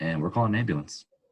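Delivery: ordinary talk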